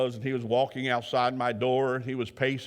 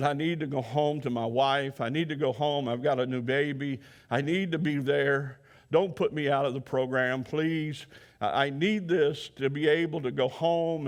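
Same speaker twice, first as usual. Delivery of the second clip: crying, sobbing, desperate, frantic voice. Retelling what a crying man said to mr. griffin, imitating a man crying, pleading. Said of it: "he was just crying".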